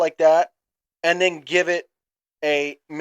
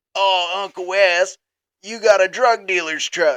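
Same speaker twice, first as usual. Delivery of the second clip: rough, raspy delivery; 3 semitones higher than usual. Speaker quotes a cousin speaking to her uncle; imitating cousin's raspy voice. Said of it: "my cousin in her raspy ass voice".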